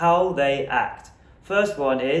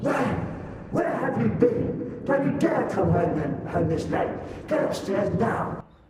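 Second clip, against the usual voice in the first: mock furious, raging scolding, pitched high; 7 semitones higher than usual. Retelling how a mother scolded a late homecoming: imitating an angry mother. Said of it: "she would be as raging as a bull".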